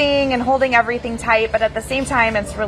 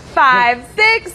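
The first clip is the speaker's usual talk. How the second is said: count stretched out slowly. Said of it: "One more time".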